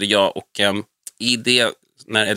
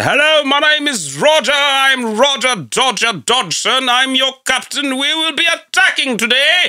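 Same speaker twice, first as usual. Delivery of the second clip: put-on British accent, very high and loud; 5 dB louder than usual. Recalling the bits others used to perform, speaker imitating a British accent. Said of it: "De gjorde också jättemycket olika så här brittiska".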